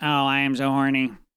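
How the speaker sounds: put-on sexy robot voice. Acting out what a sexting robot says: put-on sex robot voice. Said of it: "get into a voice going".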